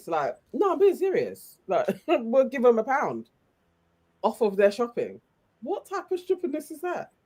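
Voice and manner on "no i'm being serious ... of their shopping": put-on deadpan, completely serious, earnest delivery. Imitating the presenter offering a pound off shopping: imitating a deadpan straight face. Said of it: "he really maintained a straight face".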